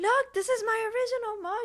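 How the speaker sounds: mock excited yelling. Retelling telling the instructors about a found mug: retelling a happy scream. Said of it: "I'm screaming at the, the instruct-, in a happy manner".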